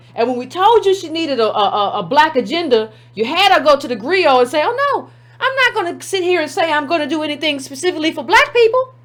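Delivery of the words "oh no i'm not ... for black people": voice pushed way up, all high-pitched. Speaker mocking a woman's quoted statement, imitating a high-pitched voice. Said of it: "Voice got all high pitched".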